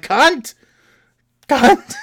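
shrill, very high, swooping swearing yells. Telling of struggling to pull shelves from a box, retelling own yelling. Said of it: "and I'm just yelling".

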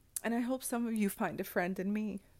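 choked up, voice catching on words. Thanking listeners for messages read in dark times, choking on words. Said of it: "I'll try to cut out me choking on my words".

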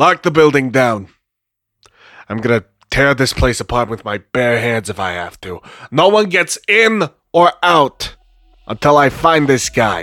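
commanding, authoritative tone. Voicing a sheriff ordering the building locked down: very loud sheriff command. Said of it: "They say that part very loudly".

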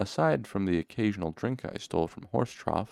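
ordinary delivery, nothing marked

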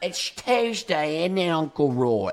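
put-on British accent. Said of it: "you kinda sound British".

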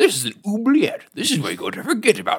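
goblin voice with swinging pitch. Retelling a movie scene to the others, doing the Hoggle voice. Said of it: "your Hoggle voice is really good".

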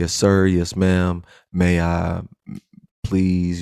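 put-on polite, deferential, respectful child voice. Acting out how a kid talks to a friend's parents: imitating a respectful kid. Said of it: "you was just off top respectful".

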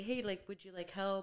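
ordinary talk

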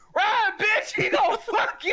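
acted, all-out, high-pitched scream. Recounting yelling a warning to a girl talking with a man, retold screaming. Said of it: "And I was screaming".

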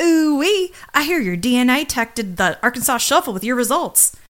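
put-on full Texan accent. Retelling what a woman said to them, imitating Abby Carmichael going full Texan. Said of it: "she goes full Texan".

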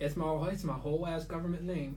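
normal talking voice

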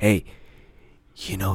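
acted grave, earnest, dead-serious delivery. Quoting a guy who came up to him, imitating a serious tone. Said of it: "he said it so serious".

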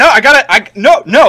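very high, loud, panicked yelping voice.

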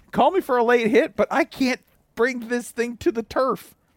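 loud high-pitched shouting. Acting out a football player yelling at the ref, retelling a yell. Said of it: "yelling at him".

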